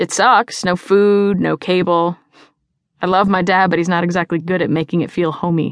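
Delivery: ordinary delivery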